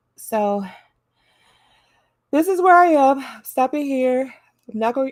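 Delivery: words stretched by yawning. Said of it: "I'm trying not to yawn".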